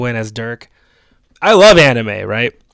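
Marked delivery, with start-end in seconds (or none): none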